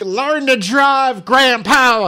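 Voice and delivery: very high, very loud, shrill, drawn-out scream. Speaker retelling yelling at a driver who almost ran them over: retelling own screaming. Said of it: "I just kept screaming".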